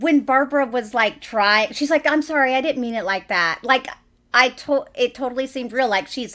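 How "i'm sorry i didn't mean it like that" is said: put-on passive-aggressive delivery. Retelling a film character's apology to her mother: imitating a passive-aggressive apology. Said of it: "she's passive aggressive, but she's trying not to be".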